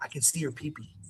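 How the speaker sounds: quick, very quiet whisper. Retelling a whisper into a wrestler's ear while the owner talks to him, retelling a whisper. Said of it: "I just whisper in his ear".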